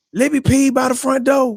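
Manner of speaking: mock, sudden, very high-pitched scream. Retelling why the show started late: imitating Parker screaming. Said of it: "comes in and screams".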